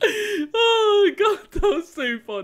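very high, drawn-out, weepy laugh-cry. Streamer reacting to something in the game, crying with laughter. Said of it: "I'm literally crying".

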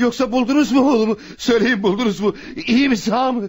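frantic, pleading, anxious, agitated, pitched high. A father asks a police officer about his missing son, agitated, anxious. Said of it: "Sakin olun".

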